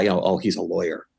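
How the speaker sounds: mock hushed voice. Describing how people up there say bad news, imitating a hushed voice. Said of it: "kind of lower their voices".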